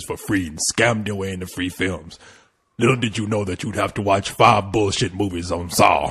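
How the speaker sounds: very low, hushed, creepy puppet voice. Speaking in character to friends, a man does the Saw voice. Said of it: "Is that your slave voice?".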